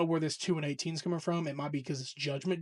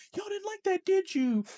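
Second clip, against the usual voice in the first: put-on teasing voice, pitched higher. Retelling a wrestler's promo line, imitating Becky Lynch teasing. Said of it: "she was teasing it".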